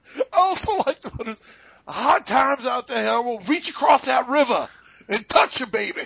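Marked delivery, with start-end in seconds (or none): 1.9-6.1 deliberately bad, hammy, overdone wrestling promo voice. Recalling a favorite hard times promo: horrible impression of it. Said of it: "I do it so horrible".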